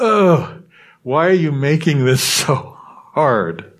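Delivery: exasperated drawn-out groan. Taylor responds to the other person's confusion about the apology: groaning with frustration. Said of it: "Taylor groaned with frustration".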